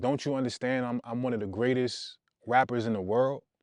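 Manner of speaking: plain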